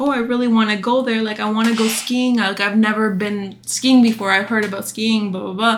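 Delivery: acted-out wheedling, pleading, begging ramble. Retelling begging a mom to go skiing: imitating own past begging. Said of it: "begging my mom".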